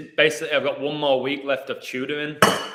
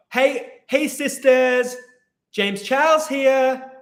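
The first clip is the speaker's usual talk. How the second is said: very high put-on voice, drawn out; 12 semitones higher, 4 dB louder than usual. Doing a YouTuber's video greeting in a James Charles voice.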